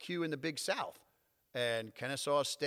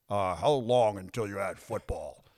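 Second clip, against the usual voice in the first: very low, slow, drawn-out newsman voice; 7 semitones lower, 8 dB louder than usual. Speaker quotes a reporter's question from the day they joined the conference, in a reporter voice. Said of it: "That's the reporter voice".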